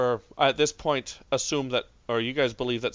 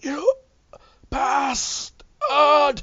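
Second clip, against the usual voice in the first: very high, loud, wheezy, rasping voice; 14 semitones higher, 6 dB louder than usual. Game master voicing a man in a bathtub as his device is crushed, wheezing. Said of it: "He sort of wheezes".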